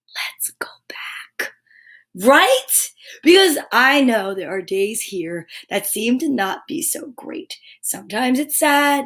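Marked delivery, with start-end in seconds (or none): 0.1-1.5 conspiratorial, mischievous, very quiet whisper. Narrator describing everyone after their turn at stories, whispering together. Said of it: "whisper at the same time".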